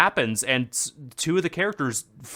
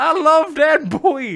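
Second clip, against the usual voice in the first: put-on shout, higher and louder; 13 semitones higher, 6 dB louder than usual. Retelling a yell at the screen when a character returned: retelling a yell at the screen. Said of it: "I literally yelled at the screen".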